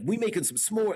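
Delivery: street-tough gangster voice. Retelling a daughter's teasing about sounding gangster: imitating gangster talk. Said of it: "make marshmallow roast sound so gangster".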